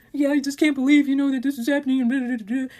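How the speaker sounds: tearful, crying, sobbing delivery. Retelling how her crying husband answered her, imitating him crying. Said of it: "So then he's crying to me".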